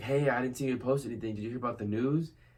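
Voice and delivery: play-acted voice full of urgency. Retelling a cousin's phone call about the news: imitating an urgent voice. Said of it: "this kinda sense of urgency in her voice".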